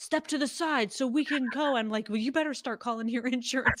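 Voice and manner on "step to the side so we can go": high yelling, drawn out. Retelling how people in line behind them yelled at them, imitating people yelling. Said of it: "they're yelling at us behind us".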